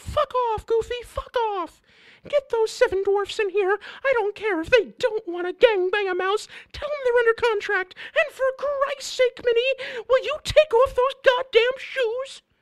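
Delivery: very high-pitched cartoon mouse voice. Recounting a joke told over a meal, the speaker does a Mickey Mouse voice. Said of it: "As Mickey".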